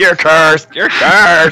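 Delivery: put-on scream. Describing Dr. Strange chasing Moon Knight around the city, mock-screaming as Dr. Strange. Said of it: "just screaming".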